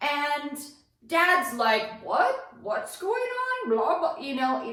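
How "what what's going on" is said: mock, very high, bewildered and confused. Retelling Dad asking what happened: imitating Dad confused. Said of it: "not fully understanding what has happened".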